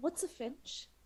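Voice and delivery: hushed whisper. In a tabletop game, [name] leans slightly over to whisper, whispering. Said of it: "gently lean slightly over and whisper".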